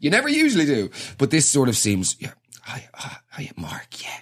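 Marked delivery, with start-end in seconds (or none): 2.2-4.2 barely audible, slow, drawn-out hushed whisper. Retelling meeting people at a funeral, the speaker acts out greeting someone, whispering. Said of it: "Why are you whispering?".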